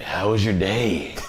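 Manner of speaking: slow, unsettling, creepy delivery. Showing a voice that makes any line sound creepy: creepy voice. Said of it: "You can use that voice with anything, and it's gonna sound creepy".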